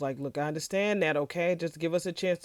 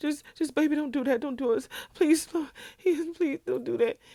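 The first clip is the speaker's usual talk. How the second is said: mock desperate, fast, tearful, crying, pleading delivery; 10 semitones higher than usual. Retelling a woman begging vaughn on the phone: imitating tearful pleading. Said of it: "Bridget is crying on the phone".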